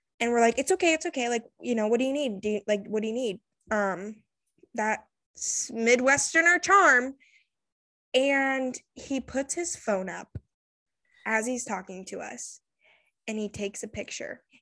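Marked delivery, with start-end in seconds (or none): 0.6-3.4 mock soothing, quick, gentle, comforting tone. Retelling how you and others calmed a shaking, mumbling man; retelling comforting a man. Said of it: "we're like comforting this man".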